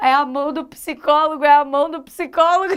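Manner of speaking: words breaking up with laughter. Describing the chat's hand gesture, laughing while talking. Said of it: "eu tô chorando de rir".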